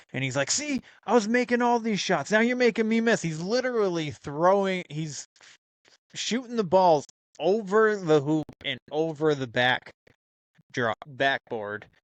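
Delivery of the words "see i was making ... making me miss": acted, very high-pitched, shrill yell. Retelling how the captain yells at the cops who walk in: imitating someone yelling. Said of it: "he starts yelling at them".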